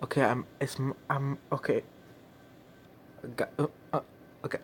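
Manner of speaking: soft, scared stammer with broken-off false starts. Speaker reacting while watching a spooky video, stuttering, scared. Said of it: "I'm stuttering, so that's how you know I'm scared".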